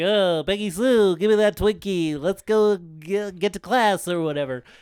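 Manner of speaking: put-on dorky nerd voice. Retelling what a guy says to Peggy Sue, in a dorky nerd voice. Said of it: "he sounds like a, a fucking dork ass nerd".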